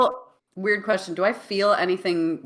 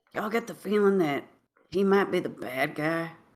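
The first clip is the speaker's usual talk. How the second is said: hushed, low-key, as quiet as possible; 4 dB quieter than usual. Once he walks away, the speaker's character turns to the others as quietly as possible. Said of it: "as quietly as possible be like".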